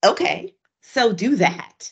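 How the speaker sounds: plain, no-fuss, very drawn-out, slow, matter-of-fact. Retelling what someone coaching them said, imitating a matter-of-fact tone. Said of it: "he said it so matter-of-factly".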